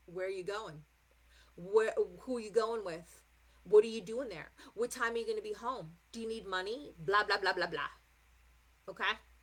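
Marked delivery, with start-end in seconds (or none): 0.1-6.9 stern, strict, fatherly grilling tone. Acting out Saturn as a strict parent questioning a child: imitating a strict parent questioning. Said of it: "But we've got Daddy Saturn, who's like".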